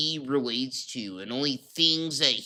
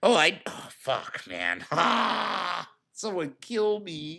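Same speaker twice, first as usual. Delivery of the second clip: very slow, swooping whine with stretched "ah"; 4 semitones higher than usual. Mocking a YouTuber who makes videos while tired: imitating Phil's whiny voice. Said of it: "the whiniest fucking voice on YouTube".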